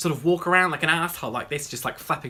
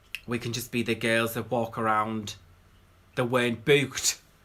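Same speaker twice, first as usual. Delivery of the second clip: put-on Scouse Liverpool accent; 4 semitones lower than usual. Quoting what a fellow YouTuber once said, imitating Fendi Lakin, Liverpudlian accent. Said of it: "that's not the accent at all. That was Liverpudlian".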